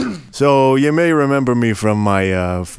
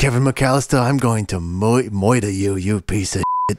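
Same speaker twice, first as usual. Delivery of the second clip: put-on bumbling burglar character voice. Playing the bumbling Home Alone burglar: Joe Pesci impression. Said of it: "when I'm bumbling in Home Alone".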